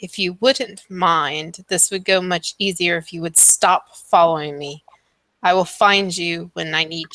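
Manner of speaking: scornful character voice. Voicing a character who turns to the group with disdain: disdainful NPC voice. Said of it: "looks at you all with a little bit of disdain".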